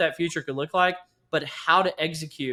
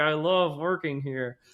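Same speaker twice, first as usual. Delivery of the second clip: put-on voice forced through clenched, gritted teeth. Retelling own past praise of former workplaces: imitating speaking through clenched teeth. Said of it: "through clenched teeth".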